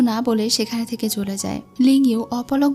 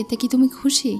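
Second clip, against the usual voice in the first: ordinary delivery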